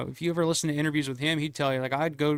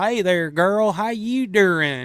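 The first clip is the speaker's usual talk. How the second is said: bad put-on Southern accent, slow and loud; 4 semitones higher, 6 dB louder than usual. Complaining about bad accents in movies, mocking with a bad Southern accent. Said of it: "There's no bad Southern".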